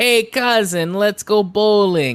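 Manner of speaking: loud, drawn-out video game character voice. Describing a game's sidekick character, imitating a game character's voice. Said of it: "I can't really do his".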